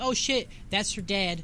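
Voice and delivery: ordinary talk, nothing marked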